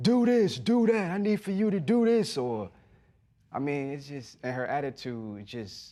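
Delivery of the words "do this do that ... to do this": put-on very high, shrieking, screaming drill sergeant voice. Describing a partner's harsh side to a host: imitating someone screaming orders.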